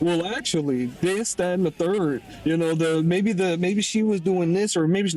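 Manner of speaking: usual speaking voice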